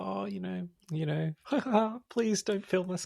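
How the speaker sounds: put-on very high, giddy, shy girlish voice. Describing how women plead not to be filmed, imitating giddy Japanese girl style. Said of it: "that kind of giddy Japanese girl style".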